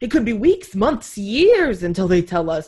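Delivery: put-on Brooklyn accent. Quoting a politician's claim about election results: Donald Trump impression. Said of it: "I don't know why he's, like, from Brooklyn".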